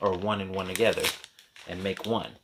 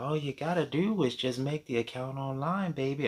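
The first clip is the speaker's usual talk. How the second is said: put-on high, doting, grandmotherly voice; 6 semitones higher than usual. Telling a story, the speaker quotes a FedEx clerk who talked like a grandma. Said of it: "That's how she talked to me, like she's my grandma".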